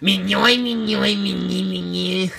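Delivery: slow, rough, creaky, drawn-out cartoon-creature voice. Listing drawings and doing a Doodle Bob impression. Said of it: "I do a good impression".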